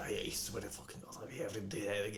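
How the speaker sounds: very quiet, hushed, strict scolding under the breath. A bugbear gives an unconscious character a strict talking-to, in very quiet scolding. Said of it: "very quietly is just like".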